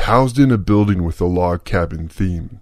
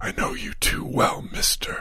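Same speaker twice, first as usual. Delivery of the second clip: murmured, very hushed close whisper; 10 dB quieter than usual. A wife leans close to her husband, whispered.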